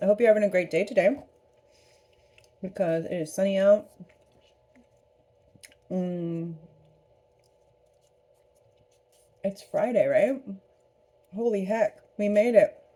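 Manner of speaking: talking with mouth full while eating. Greeting viewers while eating a cookie, talking with mouth full. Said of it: "I'm gonna sound like I'm talking with my mouth full".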